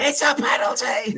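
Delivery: very high-pitched, half-held, mild yell. Recounting watching the decision on TV, retelling screaming at it. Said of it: "screaming at my TV going".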